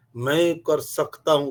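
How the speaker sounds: loud, slow, forceful, powerful, lion-like, full of energy. Contrasting beggar-like talk, showing how powerful speech sounds: loud and forceful. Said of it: "शेरों की तरह आवाज बोलते हैं। ... कितनी शक्ति है, कितनी आवाज कैसे आती है देखो।".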